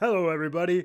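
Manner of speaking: bad silly put-on puppet voice. Host introducing a new puppet guest on the show, terrible puppet voice. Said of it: "that's a terrible voice".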